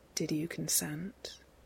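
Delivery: spoken quietly and carefully. Narrator reading Castiel asking Sam a question; quiet, careful question. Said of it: "Castiel asks quietly".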